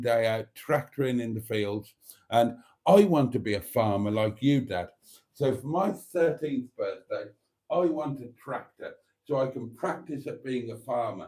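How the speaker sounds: usual speaking voice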